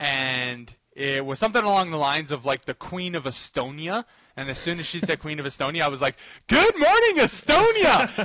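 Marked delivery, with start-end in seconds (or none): 6.5-8.2 big, loud, yelled exclamation. Speaker telling how he reacted to a quiz clue, retelling a yelled catchphrase. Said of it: "reenacting the same yelled catchphrase".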